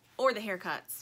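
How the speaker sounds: ordinary delivery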